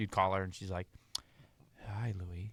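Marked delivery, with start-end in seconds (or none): 1.9-2.5 totally different telephone voice. Retelling how an aunt answered the phone: Aunt Anna's phone voice. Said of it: "she sounded totally different on the phone".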